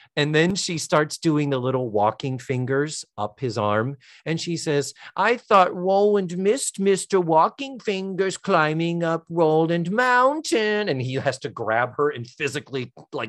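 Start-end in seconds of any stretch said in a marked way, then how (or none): 5.2-10.9 put-on babyish, childlike baby talk voice. Retelling a woman's line to a man as her fingers walk up his arm, baby talk voice. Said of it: "she does the baby talk voice perfect".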